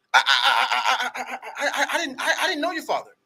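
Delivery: put-on frightened stuttering, high and slow. Retelling a phone call, imitating the man's reply: imitating a spooked stammer. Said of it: "You'd have thought this guy saw a ghost".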